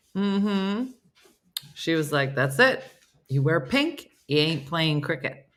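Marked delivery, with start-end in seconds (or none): none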